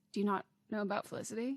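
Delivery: quiet muttered murmur under the breath. Retelling what a store worker asked very quietly: imitating someone speaking under their breath. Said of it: "under her breath, really quietly was like".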